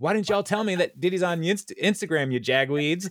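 play-acted, high-pitched shouting yell. Retelling how a woman yells at everybody, acting out the yell. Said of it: "she yells at everybody".

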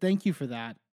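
mock, pointed, heavily laid-on sarcasm. Retelling someone's reply to another person: imitating a sarcastic thank-you.

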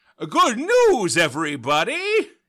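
loud, high voice with wildly swinging pitch. Repeating a hard impression over and over, in a Professor Farnsworth voice. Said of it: "Professor Farnsworth from Futurama".

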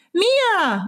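high, crying-out call.

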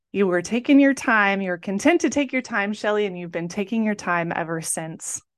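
ordinary talk

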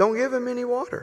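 put-on Georgia Southern accent. Retelling a story, the speaker quotes a roman guard in a georgia accent. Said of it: "In his best Georgia Roman voice".

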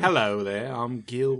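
slow, attempted put-on New Orleans drawl. Introducing a con man named Gil, attempted New Orleans accent. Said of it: "Do I not have, like, a New Orleans accent?".

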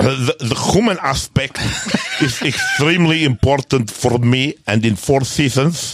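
terrible put-on Spanish accent, swooping, slurred s's. Quoting a man's pr statement after talk of his accent, use a bad spanish accent, slurred s's. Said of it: "Boris Mikhailovich is having a stroke".

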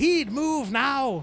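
put-on heavy Scottish accent, very high and very loud. Retelling how he would call the redheaded kid, in a thick Scottish accent. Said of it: "his dad had like a thick Scottish accent".

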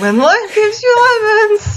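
exasperated, very high, drawn-out voice crack. Imitating a guy from a Vine: imitating exasperated voice cracking midway. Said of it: "his voice, like, cracks midway through".

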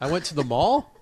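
Canadian upspeak, pitch rising on mall. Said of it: "They say sentences that sound like questions".

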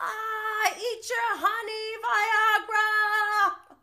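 put-on very high, loud Australian accent. Retelling a reality star's bit: imitating an Australian accent. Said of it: "when he does the Australian accent".

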